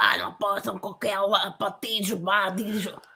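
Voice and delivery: put-on Portuguese speaking voice. Doing a quick impersonation in Portuguese while discussing Lula: impersonation speaking Portuguese. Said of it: "That's my impersonation".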